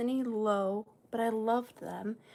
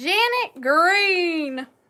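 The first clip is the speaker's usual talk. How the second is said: very loud, high yell, "Green" drawn out; 6 semitones higher, 11 dB louder than usual. A host calling out a winning bidder's name after a countdown, yelling. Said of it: "I don't know why I'm yelling".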